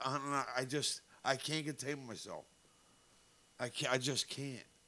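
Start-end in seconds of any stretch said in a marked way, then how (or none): none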